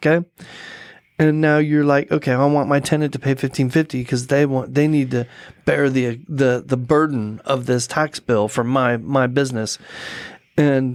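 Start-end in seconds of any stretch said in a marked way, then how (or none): none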